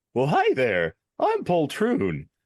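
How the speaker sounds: goofy jester voice with swooping sing-song pitch. In a game, a player answers who came along and introduces the jester: Poltroon court jester voice. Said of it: "I immediately regret letting you voice this character".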